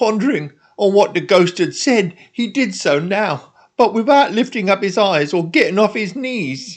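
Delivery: ordinary delivery, nothing marked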